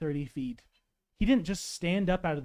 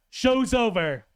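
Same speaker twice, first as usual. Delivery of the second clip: loud resonant put-on voice; 5 semitones higher, 5 dB louder than usual. A player voicing Kami speaks to Gigantomachia, booming Kami voice. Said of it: "in a voice that booms across the forest".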